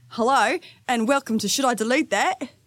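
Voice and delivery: put-on Australian accent. Opening the show Should I Delete That? on a co-host's request, Australian accent. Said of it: "let's go with Australian".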